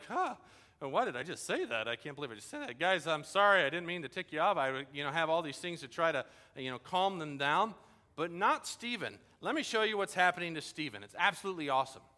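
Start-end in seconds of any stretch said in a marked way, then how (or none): 0.1-4.6 put-on nervous, scared, apologetic-sounding tone. Acting out facing an enraged council, apologizing: acting scared and intimidated. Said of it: "I'd be a little bit scared. I'd be a little intimidated and be like".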